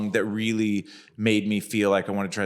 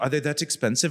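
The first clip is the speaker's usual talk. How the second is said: put-on German-accented voice, pitched higher; 5 semitones higher than usual. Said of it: "a German accent".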